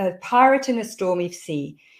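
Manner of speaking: ordinary talk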